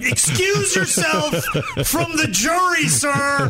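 put-on, very slow, high, drawn-out screaming judge voice. Teasing another speaker's quick verdict, imitating a judge screaming at the radio. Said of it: "a judge screaming at the radio going".

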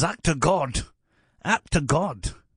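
mock Scottish comedian voice. Retelling a movie scene at an insurance company: not very good Billy Connolly voice. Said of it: "I don't do a very good Billy Connolly voice".

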